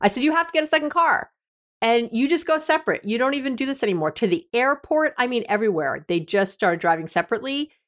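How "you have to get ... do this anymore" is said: high, fast, insistent voice. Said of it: "I insisted".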